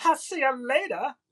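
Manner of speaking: high, slow, drawn-out amphibian character voice. Signing off the episode while quoting Frog and Toad: Toad voice. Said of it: "that's Toad".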